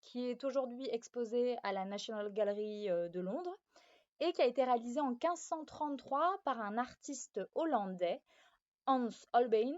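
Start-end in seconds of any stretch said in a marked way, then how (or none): 8.9-9.7 terrible fake Dutch accent. Presenting an artwork to viewers, saying the artist's name in a bad Dutch accent. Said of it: "navré pour cet accent hollandais absolument désastreux".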